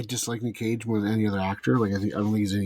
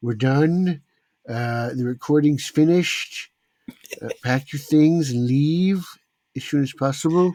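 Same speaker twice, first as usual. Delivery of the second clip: big, loud, raised blustery politician voice; 5 semitones higher, 5 dB louder than usual. Wrapping up the recording with a best attempt at a Trump impression. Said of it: "that's my best Trump impression".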